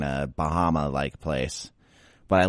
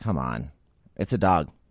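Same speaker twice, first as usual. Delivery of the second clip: plain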